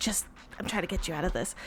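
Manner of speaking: hushed, secretive whisper. Leaning in to someone during a deal, in character: whispering in character. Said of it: "lean in and, like, whisper".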